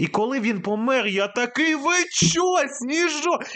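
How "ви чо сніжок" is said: high-pitched yell, crying out. Recounting when his beloved horse Snizhok died, retelling a yell at the screen. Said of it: "Я кричав в екран".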